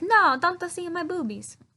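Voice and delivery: put-on Italian accent. Retelling a story, quoting a woman's protest in an Italian accent. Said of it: "It's Italian accent, not French".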